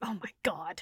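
play-acted fed-up, at-wits'-end, exasperated groan. Picturing the same companion's reaction: imitating an exasperated man. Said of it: "the just exasperated".

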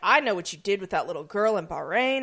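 normal talking voice

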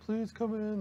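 acted-out begging in a very high voice. Acting out the odd tactics used to get them out, mock begging. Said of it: "It was like begging".

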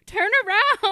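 shrill shout, very loud and very high. Retelling a reaction to people entering a flooded subway: retelling screaming at a phone. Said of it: "I'm just screaming at my phone".

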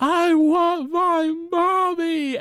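very high-pitched, tearful fake crying and wailing. Retelling a scene where Bart pushes Lisa through a giant line, Lisa fake crying and screaming. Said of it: "and like screams and cries".

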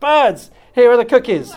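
calling out loud, high, at full voice. A narrator reads a character calling birds outside: shouting in a loud voice. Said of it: "He shouted in a loud voice".

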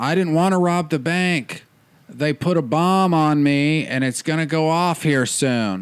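very calm, slow, unhurried and completely composed. Retelling how a man with a bomb spoke to police: imitating a calm plea. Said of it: "And just very calmly".

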